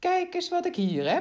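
very high, loud, exultant, triumphant cry. Reading a story aloud, a character holds up a tooth he found: triumphant call. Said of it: "riep hij triomfantelijk uit".

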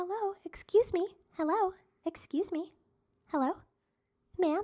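sweet, gentle little voice, high and hushed. Retelling a person speaking right at their shoulder, imitating a soft little beautiful voice. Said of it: "it was a soft little beautiful voice".

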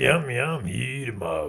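spooky, menacing grandpa voice. Retelling Grandpa searching for the hiding children, in his scary voice. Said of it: "his scary voice".

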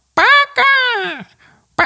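put-on shrill, very high, gross, nasty old-lady crone voice. Describing an old woman in a house, imitating the old woman's nasty voice. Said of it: "tiene una voz asquerosísima".

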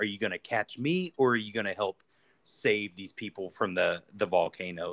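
ordinary talk, nothing marked

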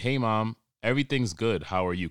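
mock proper, formal, polite delivery. Retelling own texted reply to mom: mock formal tone. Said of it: "I have to be formal and not myself".

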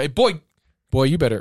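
mock scolding, telling-off tone. Showing what a parent says when a child is in trouble: imitating a scolding parent. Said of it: "If you're in trouble".

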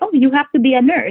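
put-on Filipino accent, teasingly done. Speaker quotes their filipino parents about a career, in a mock filipino accent. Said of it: "I gotta make fun of the accent".

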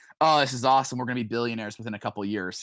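ordinary talk

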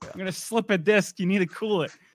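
pretend shouting in pain. Voicing a sore lower back scolding its owner: mock yelling as a sore back. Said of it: "It's just fucking yelling at you".

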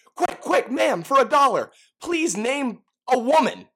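shrill, panicked, over-energetic put-on street-interviewer voice. Retelling how a street interviewer runs up to people: imitating Billy Eichner's panicked over-energetic ask. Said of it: "a panicked, you know, over-energetic way".

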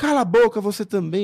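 put-on man's yell. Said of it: "E começou a gritar".

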